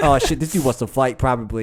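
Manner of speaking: ordinary delivery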